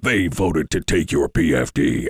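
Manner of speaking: ominous, full, low, slow doom-and-gloom voice. Describing how he'd hammer the lawmakers who voted no: doom and gloom voice. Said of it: "the full voice of doom and gloom saying".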